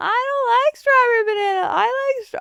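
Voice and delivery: put-on high, whiny small-child voice.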